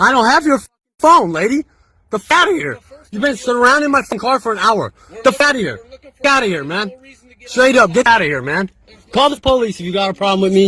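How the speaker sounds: heated, worked-up, cursing tone. Telling people surrounding his car to leave: yelling. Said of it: "why are we yelling?".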